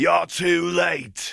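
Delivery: very high, rasping, gravelly mocking call. An unseen figure calls out from ahead in a tunnel, in a gravelly, mocking tone. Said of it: "a gravelly, mocking tone called from ahead".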